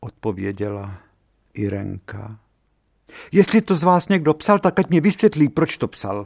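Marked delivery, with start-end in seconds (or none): 3.3-6.3 growing urgency and despair, rushed, high. A headmaster questions the class about who wrote the postcard, increasingly urgent and desperate. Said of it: "Hlas ředitele ... stále naléhavější, zoufalejší".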